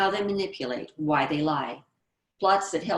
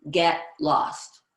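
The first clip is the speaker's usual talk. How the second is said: abrasive voice, in character; 3 dB louder than usual. Showing how an abrasive girl turns down a date: abrasive line as a character. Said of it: "Here's an abrasive trait".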